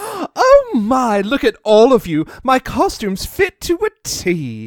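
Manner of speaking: loud character voice swooping up high. Narrating a pony story as she sees all her friends, in Rarity's voice. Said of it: "I like Rarity more every time you do her voice".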